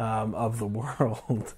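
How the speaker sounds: laughing while talking, slow, laugh-broken words, giggling. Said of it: "I can't even get to that without laughing".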